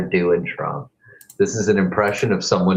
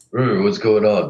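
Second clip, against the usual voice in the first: put-on very masculine voice. Greeting viewers on a live stream: put-on very masculine voice. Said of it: "This is me in my very masculine voice".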